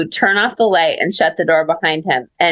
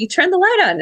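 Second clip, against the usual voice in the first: play-acted startled, disbelieving, very high-pitched tone; 12 semitones higher than usual. Retelling someone opening the door to find the light on: imitating a surprised question. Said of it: "he sounded surprised".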